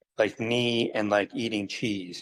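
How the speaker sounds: ordinary talk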